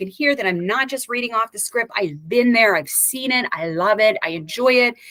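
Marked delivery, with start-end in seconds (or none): none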